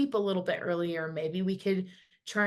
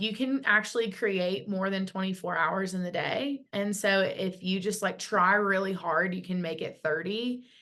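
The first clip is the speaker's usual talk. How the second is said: ordinary talk, nothing marked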